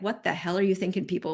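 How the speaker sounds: ordinary talk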